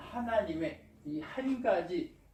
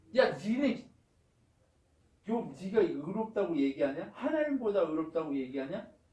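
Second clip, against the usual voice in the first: ordinary delivery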